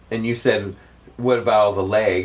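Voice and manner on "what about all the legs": plain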